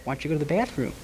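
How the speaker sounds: quiet, hushed, softly delivered taunting tone. Retelling how the prosecutor pointed at him before the jury and spoke quietly.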